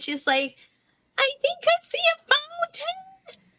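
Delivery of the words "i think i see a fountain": very high, squeaky shout. Retelling what she yelled out to the group, imitating her squeaky yell. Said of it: "it sounds probably a very squeaky voice at that point when she's yelling".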